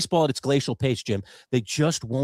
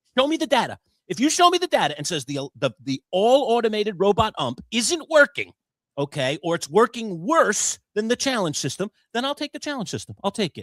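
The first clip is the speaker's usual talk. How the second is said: acted-out, high-pitched, heated yelling rant; 7 semitones higher than usual. Re-enacting yelling at Dick to show the data on the strike zone system: retelling a yell. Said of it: "I'm yelling at the poor guy".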